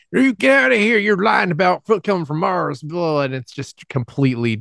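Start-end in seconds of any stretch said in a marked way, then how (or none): 0.1-3.2 put-on cranky, scolding old man voice, pitched up. Describing a show scene in a rural candy store, imitating an angry old man. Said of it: "an angry old man who's like".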